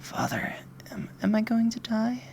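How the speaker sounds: gentle, soft-spoken voice with pitch lifted up. Narrating a story, the daughter asks her dying question to her father, soft voice. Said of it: "asks you with a soft voice".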